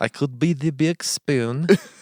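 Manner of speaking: put-on Russian accent.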